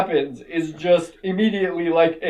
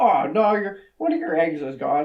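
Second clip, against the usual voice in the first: put-on offhand, nonchalant, casual, unbothered voice; 6 dB quieter than usual. Retelling a movie scene, the dad walking in: imitating a nonchalant dad. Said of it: "just walks in and just nonchalantly".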